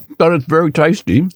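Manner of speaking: talking with mouth full. Answering while eating ice cream in a croissant: talking with mouth full. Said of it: "it's rude to talk with your mouth full".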